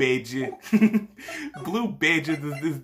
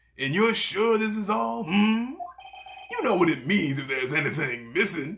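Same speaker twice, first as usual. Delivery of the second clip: put-on older man's voice, slightly aged, pitched a touch higher; 5 semitones higher than usual. Reading an episode aloud, doing the Chief Gant voice. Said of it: "It sort of sounded like Larry's, but older".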